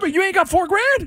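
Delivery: voice shooting up very high. Making an argument in a group discussion, high-pitched voice. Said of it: "my voice get so high?".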